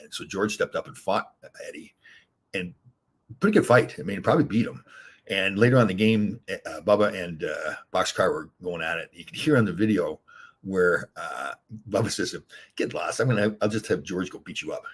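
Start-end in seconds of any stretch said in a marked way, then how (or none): none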